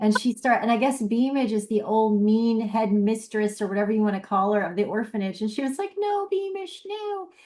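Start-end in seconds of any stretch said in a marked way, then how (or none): 6.0-7.3 put-on very high, tiny little-girl baby voice. Retelling an actress playing a hypnotized girl: imitating a little baby voice. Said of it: "using a little baby voice".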